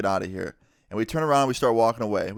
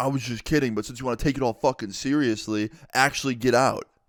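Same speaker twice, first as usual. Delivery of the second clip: put-on angry male voice. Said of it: "mad at me. He's like".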